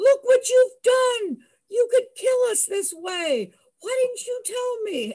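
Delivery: very high, loud, enraged, furious screaming. Retelling how a boyfriend reacted to the rising tide: imitating John screaming. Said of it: "he starts screaming".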